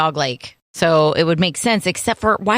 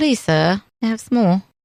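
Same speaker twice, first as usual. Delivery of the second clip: put-on child voice. After a comparison to the kids from Oliver, speaker does the Oliver voice. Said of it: "Sounds like the the kids from Oliver".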